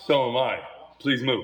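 dead serious, dismissive, no joking. Retelling a locker room security guard's reply: imitating someone dead serious. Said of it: "dead serious".

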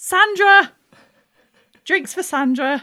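very high, very loud, shrill shout. In a coffee shop queue, the pine marten shouts a customer's drink order: shouting a drink order.

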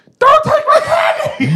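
very high, top-of-the-lungs scream. Recalling someone grabbing their candy bag, the speaker re-enacts a top-of-lungs yell. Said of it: "yelled at the top of my lungs".

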